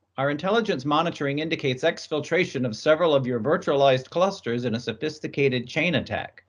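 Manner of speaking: plain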